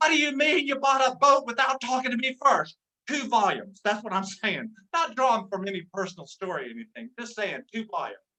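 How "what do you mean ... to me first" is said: put-on furious yell at full volume. Comic imitates a sweet woman's second volume, mad at Charles: mock-angry loud volume. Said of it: "Mad at Charles".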